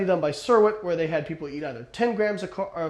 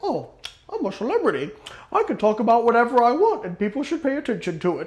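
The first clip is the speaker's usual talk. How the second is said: put-on self-important celebrity voice, British accent; 4 semitones higher than usual. Mocking what celebrities think, in a put-on British accent. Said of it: "I don't think [name] has a British accent".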